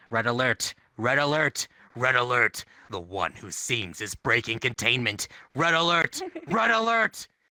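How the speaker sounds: low, robotic automated speaker announcer voice. Narrating a game scenario, voicing the alert over the speakers: automated announcement voice. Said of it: "An automated voice comes over the speakers".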